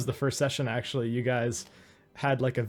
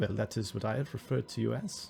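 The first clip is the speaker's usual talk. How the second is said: put-on slight German accent, quieter; 6 dB quieter than usual. Voicing a character answering an objection to being called bushmen, slight German accent. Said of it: "He's like a slight German in it".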